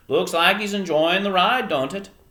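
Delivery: put-on loud, high-pitched Eastern Maine accent, belted out. Reading a story aloud, voicing the old man in an attempted Eastern Maine accent. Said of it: "I'm trying to do an Eastern Maine accent".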